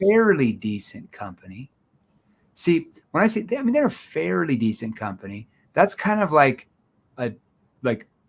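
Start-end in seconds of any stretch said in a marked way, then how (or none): 3.6-5.5 skeptical, doubting, swooping, unconvinced tone. Teaching how tone changes meaning, demonstrating a skeptical, doubting tone. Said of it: "I'm doubting that / I'm kind of skeptical there".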